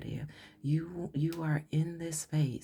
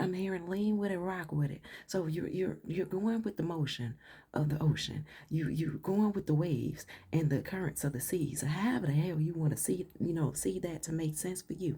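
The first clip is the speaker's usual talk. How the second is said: normal talking voice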